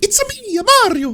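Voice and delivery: put-on very high, slow, over-the-top Italian accent. Describing how a dubbed movie voice sounds, imitating it: Mario voice. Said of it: "it sounds like that".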